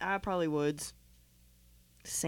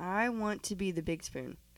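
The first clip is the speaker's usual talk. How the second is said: ordinary talk, nothing marked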